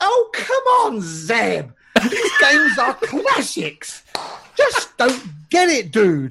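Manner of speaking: high-pitched, swooping put-on voice. Acting out what Ryan is going to say any minute now, Ryan impression. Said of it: "That was a great impression of Ryan".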